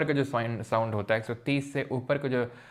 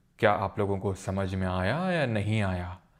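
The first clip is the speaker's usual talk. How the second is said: deep voice, pitch dropped, bass added; 3 semitones lower than usual. Explaining how adding bass affects pitch, speaking in a deep low voice. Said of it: "मैंने बेस बढ़ा लिया अपनी voice का".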